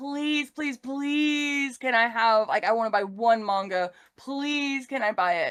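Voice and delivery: desperate pleading, many pleases piled on. Retelling begging a mom for a manga: imitating begging her mom. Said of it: "I was begging my mom".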